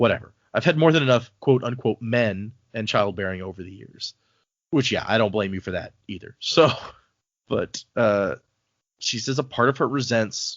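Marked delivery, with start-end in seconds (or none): none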